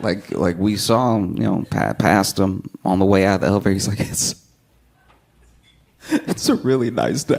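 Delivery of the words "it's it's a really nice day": mock happiness spilling into upset, overwhelmed, emotional. Retelling what an overjoyed guy said at the elevator: imitating an overjoyed, emotional guy. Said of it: "one guy that was so happy, he got upset".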